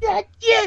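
very high, flipped-out, blurted cry. Retelling a player's outburst after losing at cards: Cartman voice. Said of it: "He sounded like Cartman".

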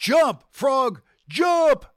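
loud, high-pitched yelling.

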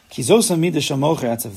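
ordinary talk

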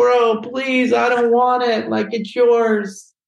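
acted-out tearful crying, voice very high. Retelling refusing to take the camera: retelling crying plea. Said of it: "I was crying".

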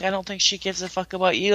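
put-on mumbled speech. Retelling what a woman on the show said, retelling a mumbled remark.

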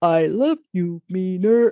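stiff, robotic delivery. Mocking an actor's accent in a film, the speaker imitates his robotic Dracula line. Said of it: "He says it that robotic".

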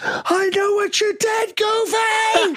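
very high, slow, drawn-out blurted shout. Telling a story about a photo, the speaker re-enacts what he yelled at goofy: retelling a yell. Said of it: "He yells".

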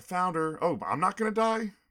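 shrill, full-on scream, very high and very loud. Discussing a movie scene, the speaker acts out a character's reaction: acting out a scream. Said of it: "she starts screaming".

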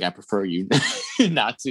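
half-whispered aside. Retelling a scene with a sales guy: imitating a half-whisper. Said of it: "He kinda whispers it".

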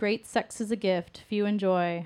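ordinary delivery

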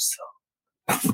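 hushed, intimate whisper close in the ear. Retelling a book scene where a character speaks into an ear: imitating a whisper. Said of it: "And then she whispers".

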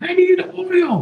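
stiff, very high, frozen-up, squeezed-out voice. Checking whether others can hear a weird voice over the mic, in a Tin Man voice. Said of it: "Tin Man needs oil, and he's all frozen up".

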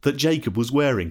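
plain reading voice

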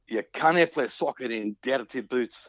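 put-on speaking in Scottish accent. Retelling a quote Jimmy once made, imitating Jimmy's Scottish accent. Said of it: "excuse my my Scottish accent".

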